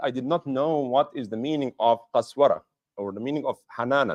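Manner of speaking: ordinary talk, nothing marked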